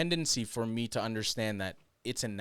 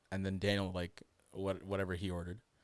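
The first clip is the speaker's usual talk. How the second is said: ordinary talk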